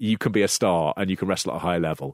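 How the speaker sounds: usual speaking voice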